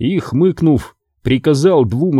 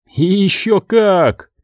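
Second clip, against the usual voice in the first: bitter laugh through the words, pitched up; 6 semitones higher than usual. The youth answers a stranger who claims the enemy only resembles him; bitter laugh. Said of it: "горько рассмеялся юноша".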